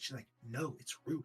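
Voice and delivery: hushed whisper. Storyteller voices the bard in a hushed talk with him on a log, hushed whisper. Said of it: "talking in this little whisper".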